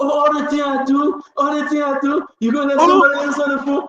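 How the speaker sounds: mock high-pitched shrieking, shouted rant. Retelling what she screamed on the phone: imitating someone screaming. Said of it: "She was screaming".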